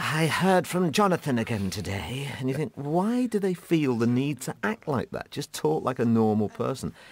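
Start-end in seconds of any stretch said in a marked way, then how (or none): 0.0-2.3 overwrought, breathy, theatrical, dramatic delivery. Imitating people who act dramatic, mock-dramatic breathy voice. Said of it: "they're all breathy going".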